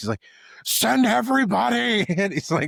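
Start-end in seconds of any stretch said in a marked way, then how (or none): 0.7-2.1 high, loud, panicked, freaked-out delivery. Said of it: "freaking out".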